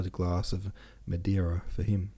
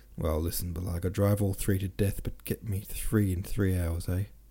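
ordinary delivery, nothing marked

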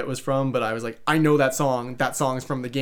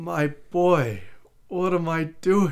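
slow, high, drawn-out sorrowful voice; 5 semitones higher than usual. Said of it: "the voice of a, of a disappointed father".

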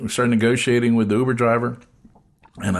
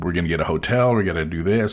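normal talking voice

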